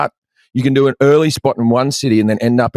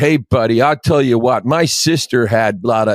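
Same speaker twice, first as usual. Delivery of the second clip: put-on argumentative, know-it-all tone with American accent. Retelling how an American heckler argues with a comedian: imitating an American heckler. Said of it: "if an American heckles you, they're always like".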